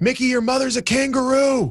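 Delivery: put-on shrill yell, very high. Retelling heckling a player at the free-throw line: imitating own past yell. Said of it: "and I yelled".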